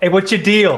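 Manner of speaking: hollered, loud voice. Calling out to a chained prisoner from a storage room: yelling. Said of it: "did you yell that into the space?".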